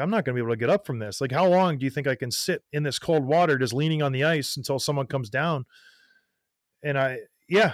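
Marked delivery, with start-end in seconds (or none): none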